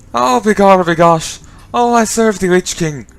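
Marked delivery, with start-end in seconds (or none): 1.9-3.0 deliberately bad, put-on Irish accent. An irish player voicing a character in a game, in a bad irish accent. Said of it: "Irish guy does bad Irish accent".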